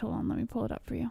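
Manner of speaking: whispered, breathy, hushed, seductive, sexy voice. Answering a question about a boxer's age: sexy voice. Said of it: "why'd you do that sexy voice?".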